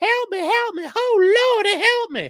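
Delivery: very high, slow, wailing screaming voice. Acting out going to the judge for help: mock screaming for help. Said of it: "go run up to the judge screaming like".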